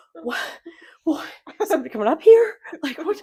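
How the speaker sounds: put-on hyperventilating alarm, high, rushed, words tumbling out. Retelling own reaction during a plane drop: retelling own panicked hyperventilating.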